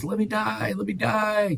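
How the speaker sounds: very high-pitched, delirious, wailing cry. Retelling the speaker's ill mother crying out, imitating delirious crying out. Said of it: "She's crying out delirious".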